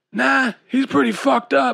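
very high, hoarse, raspy voice. Narrator reads a character's reply in a story: raspy voice. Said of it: "he said in a raspy voice".

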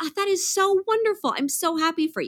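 sincere, happy, genuine delight, pitched high. Retelling their reaction to someone's career news, acting out genuine delight. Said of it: "I was very genuine".

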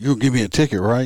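mock-happy, put-on cheerful voice. Having pulled over a speeding driver, retelling his reply, imitating a happy driver. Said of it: "he was all happy about it".

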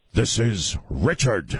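clumsy film-star voice through a clenched jaw. Talking on the air with a jaw cramp: Al Pacino impression. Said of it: "That was the worst Al Pacino I've ever done".

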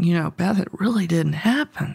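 put-on conspiratorial tone. Retelling what a lunch companion leaned over and said: imitating a conspiratorial tone. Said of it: "in sort of a conspiratorial tone".

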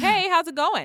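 very loud, high, hearty voice. The speaker retells answering a phone call from a caller, talking real loud. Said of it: "Real loud".

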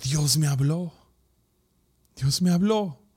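mock voice half cracking. Retelling what a son said after opening his eyes: imitating a half-broken voice. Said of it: "me lo dice con la voz media quebrantada".

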